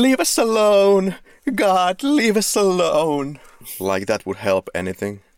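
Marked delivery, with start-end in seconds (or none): 0.0-3.4 play-acted very high, stretched-out, drawn-out shriek. Quoting a favorite line from the film: imitating Rachel screaming. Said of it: "Rachel screaming".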